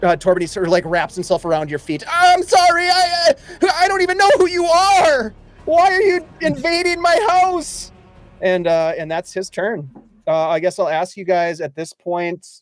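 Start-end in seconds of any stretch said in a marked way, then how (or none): 2.1-7.9 frightened, cowering, very high-pitched pleading voice. A game master voices a character wrapped around a player's feet, cowering. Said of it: "he just sort of like just cowers".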